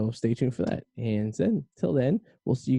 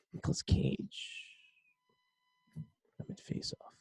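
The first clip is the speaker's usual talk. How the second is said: very high pitch swooping around; 12 dB quieter than usual. Doing a quick impression while chatting about an actor: Nicolas Cage impression. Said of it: "That's my Nicolas Cage impression".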